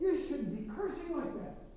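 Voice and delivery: gentle, loving tone. Speaker recounts what they tell others, retelling it in a loving way. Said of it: "I try to say it in a loving way".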